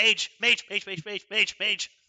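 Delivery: very loud, high, frantic panicked yelling. Narrating a character who ducks back behind cover: panicked shouting. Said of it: "and he shouts".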